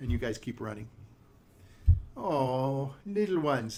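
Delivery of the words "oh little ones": put-on witch voice with drawn-out "oh". Voicing a witch calling after running little ones: witch character voice. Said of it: "she's watching you run".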